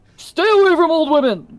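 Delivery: shouting. Asked why they are yelling at a companion, a character answers: yelling. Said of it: "I'm gonna yell at you".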